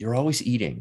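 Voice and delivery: ordinary talk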